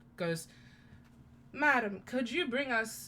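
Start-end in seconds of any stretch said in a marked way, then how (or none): 1.5-3.1 put-on elderly man's voice. Retelling a scene where disguised Casper flags a woman over to order, old man voice. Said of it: "in the old man voice".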